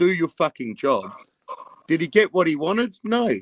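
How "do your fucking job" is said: acted, mock furious raging rant. Act out someone going at Bins while the leadership team plays badly, acting out raging at someone. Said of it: "raging at him".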